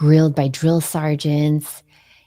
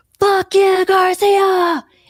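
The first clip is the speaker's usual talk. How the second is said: mock, shrill, very high, loud battle cry; 5 dB louder than usual. Retelling a master chief calling out across the area: imitating a yell. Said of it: "my master chief across Area eleven yelled out".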